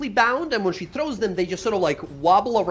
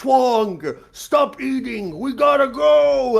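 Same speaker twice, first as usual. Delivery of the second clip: very slow, loud, stretched-out, drawn-out shout; 5 semitones higher, 5 dB louder than usual. Narrating a game, the speaker voices a character upstairs calling to his companion, yelling out. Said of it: "you hear him sort of yell out".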